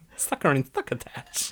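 cartoon cat voice with lisp. Mocking how the other speaker said 'human beings', Sylvester voice. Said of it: "You turned into Sylvester. You're like".

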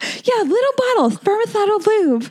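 nerdy put-on impression voice.

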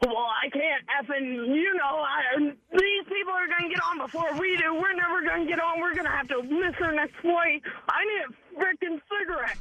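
irritable, fed-up griping. Retelling how her husband reacted while waiting to board: imitating her husband's irritable complaining. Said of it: "your impersonation of him should get an Academy Award".

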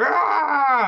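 enraged, big, high, loud yell. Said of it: "And I think he yells too".

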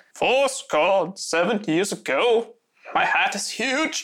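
slow voice with words drawn out. Answering with a rival Lincoln impression: Lincoln impression. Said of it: "You wanna hear mine?".

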